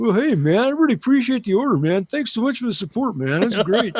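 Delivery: friendly, loud, high-pitched, easygoing dude voice. Retelling phone calls from a factory rep: Tommy Chong voice. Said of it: "sounds exactly like Tommy Chong".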